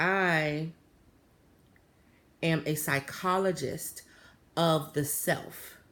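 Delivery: strange, peculiar, odd, slow, deliberate delivery. Retelling what a man said about his work, imitating his weird delivery. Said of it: "he said it weird".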